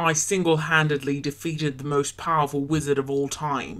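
put-on low-pitched, whiny British accent. Voicing Harry for a Potter pals bit, low British accent as Harry. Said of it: "pitch changed for me to be lower, and they're both British accents".

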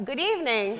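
wide, sing-song calling tone.

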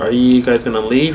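usual speaking voice

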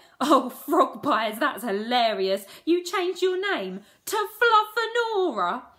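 very loud, shrill, high cackling laugh through words. Reacting to another character's confession about her name; cackling. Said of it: "Peggy cackled and nearly fell off her chair".

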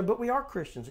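ordinary delivery

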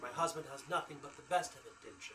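put-on high-pitched mid-Atlantic, transatlantic accent. Voicing a woman character, in a transatlantic accent. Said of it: "she says in her, what do they call that, a mid-Atlantic accent? Transatlantic".

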